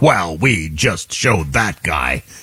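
grave, low, stern, very slow newsreader voice. Mocking news anchors reporting a removal: imitating a stern newsreader. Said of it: "in a stern voice".

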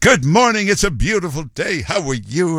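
big bubbly 1950s announcer voice. Recalling 1950s radio hosts, mimicking their on-air greeting in a big bubbly radio voice. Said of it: "they were just this big bubbly voice".

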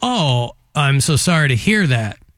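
plain

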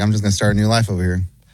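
fast, carefree, rattled-off delivery.

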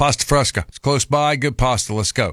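ordinary delivery

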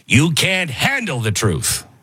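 slow, wide-ranging growl impression.

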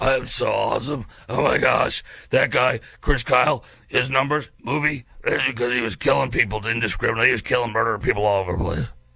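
mock gravelly, boastful voice. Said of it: "in your gravelly voice".

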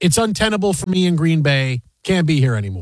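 ordinary delivery

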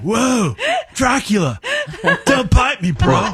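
slow, swooping, drawn-out surfer-dude bro voice. Mocking an actor's casting with a Keanu Reeves surfer voice. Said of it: "he's like".

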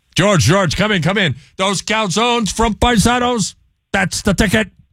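very high put-on voice, sold with commitment. Answering a caller's request for a George Steinbrenner impression. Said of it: "How is your Steinbrenner imitation?".

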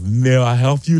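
put-on Russian accent. Retelling a welder looking up from his work, in a russian accent. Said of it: "like kind of like Russian accent".

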